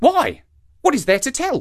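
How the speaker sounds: startled, surprised, very high-pitched. The monkey answers the shark, who has promised to tell the truth; surprised. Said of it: "asked the monkey with surprise".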